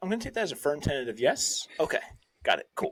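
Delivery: casual, tossed-off, completely deadpan delivery. Retelling a favourite throwaway line: deadpan Jason Bateman delivery. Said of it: "Bateman's, like, deadpan delivery".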